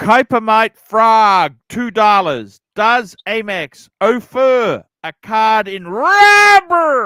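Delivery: very slow, loud, impassioned delivery. Rereading a super chat after being asked: passionate reading like Pontiff. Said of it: "with, uh, passion as Pontiff would do".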